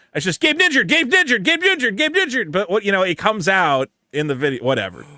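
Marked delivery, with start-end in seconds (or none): 0.4-2.5 very high, rattled off at top speed, repeated. Showing how the name should be said: saying it really fast. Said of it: "have him say "Gabe Ninjured" really, really, really fast".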